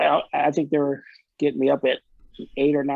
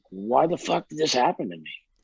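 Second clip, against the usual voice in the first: mock tearful, despairing crying out; 3 dB quieter than usual. Retelling lying in bed staring at the ceiling: imitating own past crying. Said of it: "crying, going".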